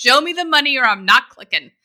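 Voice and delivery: high, loud, distrustful voice. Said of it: "People are like".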